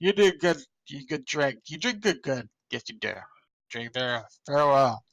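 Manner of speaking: put-on slurred drunk speech. Describing how a very drunk person talks, imitating drunk slurred speech. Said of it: "He's like slurring his words like".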